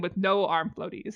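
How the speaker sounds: ordinary talk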